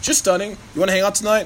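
plain

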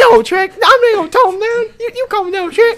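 put-on cartoon donkey voice. Playing a scene with another speaker as Shrek: Donkey impression. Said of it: "this donkey's pretty good".

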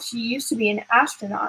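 ordinary delivery

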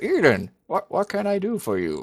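very high, talking around a mouthful of food. Narrator voicing Nemirian, who speaks with his mouth full of cookies. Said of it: "around the cookies, he says".

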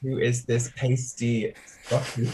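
ordinary talk, nothing marked

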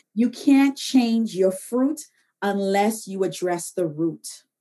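very slow, deliberate, word-by-word emphasis. Speaking to listeners right after announcing it will be said slowly: spoken slowly. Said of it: "I'm going to say this slowly".

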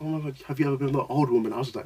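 hushed, half-whispered stage whisper. Retelling what a dance partner said, imitating someone half-whispering. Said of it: "she's whispering stuff like".

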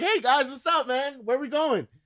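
breezy, carefree casual tone. Friends searched for a missing friend who shows up, acting out a casual greeting. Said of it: "He just showed up like".

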